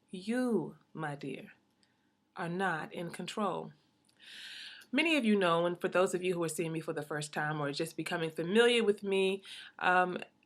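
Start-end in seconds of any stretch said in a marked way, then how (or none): 0.1-3.7 very slow, deliberate, every word drawn out. Speaker telling the audience a point they want to seep in, very slowly. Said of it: "I want to say this very slowly".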